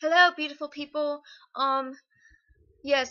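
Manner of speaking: very loud put-on British accent. A video host, asked to do the whole video this way, greets viewers in a British accent. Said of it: "this is my British accent".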